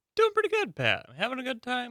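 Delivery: voice jumping very high, swooping, sing-song and cheery. A producer answers the host's on-air check-in, in a high-pitched voice. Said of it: "your voice got so high there".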